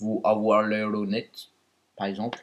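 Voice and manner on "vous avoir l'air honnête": put-on Russian accent with rolled R's. Speaker demonstrates accents to another speaker, Russian accent. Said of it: "L'accent russe, c'est genre".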